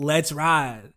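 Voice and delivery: put-on smooth, suave ladies'-man swagger voice. Mocking how an athlete talks in a hype video: imitating a suave voice. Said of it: "does that voice where he's like the, the suave".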